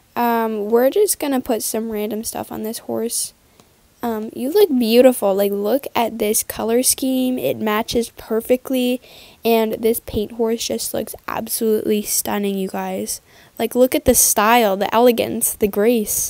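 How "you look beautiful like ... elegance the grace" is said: ordinary talk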